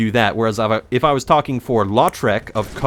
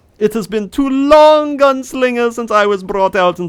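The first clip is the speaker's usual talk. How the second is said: put-on German accent, very high and loud; 12 semitones higher, 5 dB louder than usual. Speaker brings out Heinrich to address the Gunslinger, Heinrich's old German voice. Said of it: "my old German voice".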